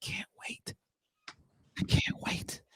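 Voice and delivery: hushed, breathy whisper, barely voiced murmur. Joking about what the champ says when whispering: whispering like Deontay Wilder. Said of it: "what Deontay Wilder be saying when he be whispering".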